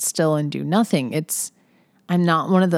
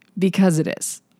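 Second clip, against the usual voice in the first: mock dead serious, flat, matter-of-fact deadpan; 2 semitones higher than usual. Retelling what Jeremy said while driving around, imitating Jeremy's deadpan. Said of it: "deadpan, totally serious".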